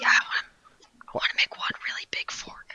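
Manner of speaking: hushed whisper. In an empty engine room, a self-styled mad scientist tells a partner his idea, whispering. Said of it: "Why are we whispering?".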